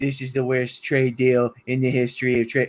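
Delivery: put-on goblin-style character voice. Speaker quotes what a man said on first getting into office, in a goblin voice. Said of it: "you just did a goblin voice".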